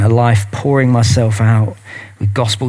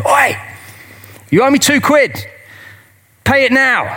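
put-on very high, drawn-out, demanding shout. Retelling a parable where the servant demands his debt: imitating someone shouting. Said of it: "And he shouts at him".

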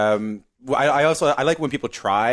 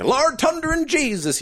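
very high-pitched, fake Newfoundland accent. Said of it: "whenever anyone tries to do".

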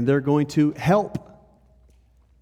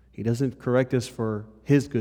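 strong stress on the word his. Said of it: "He corrects us for our good".

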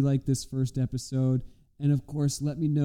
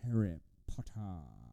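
deep, low, slow, dragged-out drawl; 5 semitones lower, 11 dB quieter than usual. Showing how a game character could sound: Alan Rickman as Snape voice. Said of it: "did I do a good Alan Rickman?".

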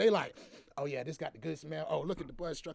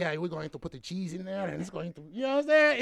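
fake Mexican accent, louder and faster; 7 dB louder than usual. Speaker quotes a guy to the others, in a put-on Mexican accent. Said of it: "I got the Mexican accent".

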